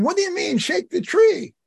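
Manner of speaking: high-pitched shouting. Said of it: "So I shouted to him".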